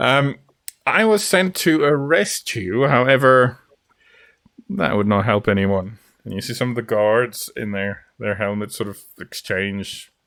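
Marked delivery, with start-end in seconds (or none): 0.9-6.0 smug, pleased-with-himself, satisfied pronouncement. Voicing a commander speaking to a holy man: massively satisfied, smiling. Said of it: "he's got a massively satisfied smile on his face".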